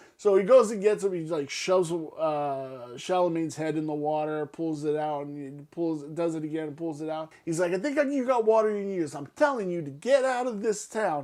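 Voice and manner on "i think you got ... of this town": put-on New York accent, pitched up. Retelling a movie scene, quoting a character: New York accent. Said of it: "he's got this, like, New York accent".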